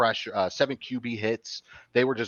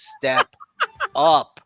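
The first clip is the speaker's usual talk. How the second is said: very high, raised shouting; 14 semitones higher, 7 dB louder than usual. Retelling shouting at a quarterback on screen: imitating a yell. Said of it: "I'm yelling at the screen".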